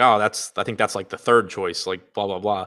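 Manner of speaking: usual speaking voice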